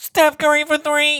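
very high stage musical delivery. Saying the requested patron line, Hamilton style: Lin-Manuel Miranda impression. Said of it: "I'll do my best Lin-Manuel impression".

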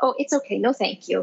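mock-sweet polite tone. Retelling a woman refusing a nurse's exam, the speaker quotes her imitating a sweet, nice tone. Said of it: "in a very nice, sweet tone of voice".

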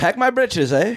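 high-pitched, very high, terrible put-on British accent. Friends take turns trying other accents; a bad put-on accent. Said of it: "I don't know what that last one was".

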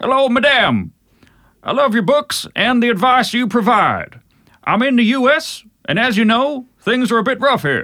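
sergeant-major bark, pitched way up. Reading a Texan listener's email aloud: Tommy Lee Jones voice. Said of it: "I'll do a Tommy Lee Jones".

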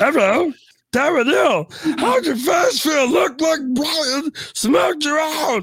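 very high-pitched, loud voice. Taking a turn to do a voice, imitating Katie Wetmore. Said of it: "this is my sister right here, Katie Wetmore".

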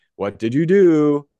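slow, loud voice. Retelling a doctor questioning a patient who is hurting again: Doctor Gundry voice. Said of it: "Doctor Gundry in his voice is like".

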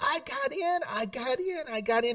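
acted, joyful, high screaming, words stretched long. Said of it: "What are you screaming about?".

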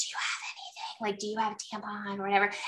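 very soft, hurried, secretive whisper.

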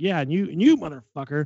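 mock half-hearted, mild, angry hollering. Retelling how he scolded the umpires: imitating someone yelling. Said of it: "he's yelling them both".

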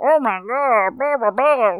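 high-pitched cartoon monster voice. Discussing reindeer who sound like Big Mouth hormone monsters, doing a Comet voice. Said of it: "he's like".

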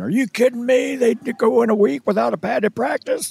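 put-on very high, incredulous old man voice. Acting out how old-time football purists react, in an old guy impression. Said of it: "I like your old guy impression".

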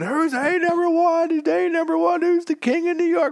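acted, shrill, very high, loud screaming. Retelling a scene where the president shoots the Duke, retelling a scream. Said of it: "he's screaming".

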